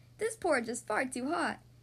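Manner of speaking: ordinary delivery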